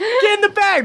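high, stern, scolding adult voice.

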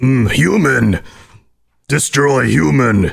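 mean, nasty, menacing mutant character voice. Showing the kind of dialogue lines he records, in a mean super mutant voice. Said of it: "You've got a mean super mutant voice".

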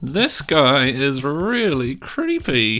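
very slow, drawn-out words from side of mouth. Speaking in character, behind another character, about a creepy stranger: muttered out of the corner of mouth. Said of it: "says out of the corner of his mouth".

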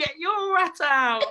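very high, loud, drawn-out squeaky voice. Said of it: "a squeak in his voice".

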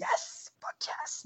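soft, whispered celebration.

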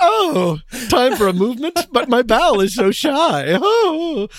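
slow, high Southern belle voice. Joking about a funny nickname for the bowel, in a Southern belle voice. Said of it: "sound like a Southern belle".

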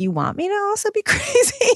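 high-pitched, incredulous voice.

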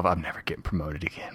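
muttering to oneself. Role-playing, his character stands at the back of the group, muttering to himself. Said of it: "i'm just muttering to myself".

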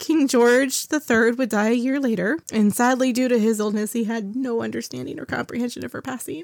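choked-up voice catching, close to crying. Telling a history story to a listener, voice choking up. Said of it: "I'm going to cry. I'm sorry. This just makes me really sad".

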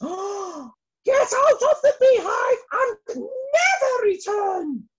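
very high, shrill, drawn-out top-of-the-voice scream. Narrator reading an enraged queen bee's line, screaming at the top of her voice. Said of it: "she screamed at the very, very top of her voice".

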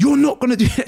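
mock shouting. Retelling what she shouted at you in the physio department, imitating someone shouting. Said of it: "She's shouting".

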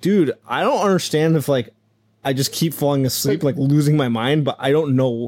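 ordinary talk

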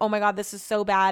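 acted panicked voice. Speaker recalls the room spinning during a vertigo attack, acting out own past panic. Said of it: "I panic".

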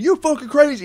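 very high-pitched, screamed yell. Recapping a movie scene where a man yells at a woman from his car, mock yelling. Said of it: "yells at her".

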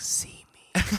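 soft, breathy whisper. Retelling a scene where Vlad calls to a woman: whispering like Vlad. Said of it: "he whispers to the woman for her to see him".

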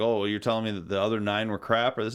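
plain

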